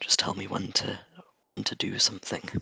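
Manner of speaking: very quiet, under breath. Following the spine devils while they aren't looking, uttered really quietly under the breath. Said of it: "really quietly under my breath".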